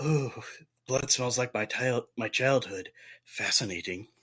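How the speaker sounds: slow, musing half-whisper under the breath. Voicing a character who mutters to himself about blood: half-whispering to himself. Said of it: "whispering to himself".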